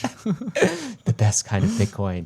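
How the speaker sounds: very slow, sing-song, swooping advert voice. Mocking a fund's marketing in the Fidelity voice. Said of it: "that's my Fidelity voice".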